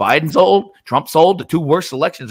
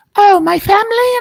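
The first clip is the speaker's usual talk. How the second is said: very high, scornful, derisive put-on voice; 4 dB louder than usual. Mocking a woman's public statement by doing her voice. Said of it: "I'm gonna do her voice".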